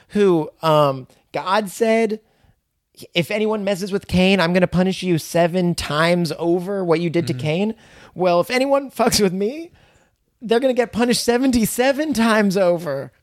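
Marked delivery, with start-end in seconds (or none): 8.1-13.0 mock yelling. Retelling a man from the Cain story yelling at his wife, retelling a yell. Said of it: "He's just yelling at his wife".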